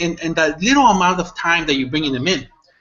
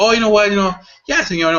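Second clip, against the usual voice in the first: easygoing, relaxed put-on Mexican English accent; 3 semitones higher than usual. Retelling a man answering a business person's questions, in a put-on Mexican English accent. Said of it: "with his little, you know, Mexican English accent".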